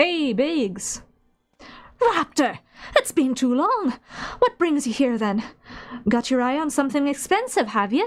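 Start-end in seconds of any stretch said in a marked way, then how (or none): 2.0-8.1 put-on animated Irish accent with swooping, swinging tune. Playing a game, voicing Biggs greeting Raptor, high-pitched Irish accent. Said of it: "Biggs has high pitched voice and an Irish accent".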